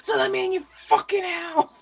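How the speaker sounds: very high-pitched scream. Retelling a scene from the movie Fear: imitating Mark Wahlberg's character screaming. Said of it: "screaming through the people".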